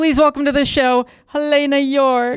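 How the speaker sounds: voice flips into falsetto on "Helena York". Welcome your friend and former college roommate to the show, with a falsetto on "Helena York". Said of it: "you hit like a falsetto on my name".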